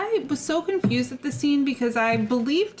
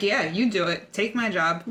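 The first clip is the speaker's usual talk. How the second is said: ordinary delivery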